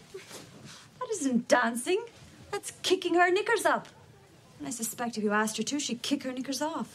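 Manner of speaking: put-on Irish accent. Acting a film scene, scolding Joseph about Grace: Irish accent. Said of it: "she's also doing an Irish accent".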